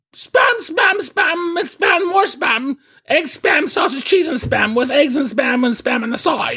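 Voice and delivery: very high put-on lady voice by a man. Podcast hosts trading comedy bits, Monty Python lady voice. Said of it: "I sound like the ladies from the guys doing women from Monty Python".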